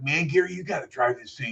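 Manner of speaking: spaced-out burnout stoner voice. Retelling what a friend said after a wild drive, imitating a burnout's talk. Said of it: "he talked like a burnout".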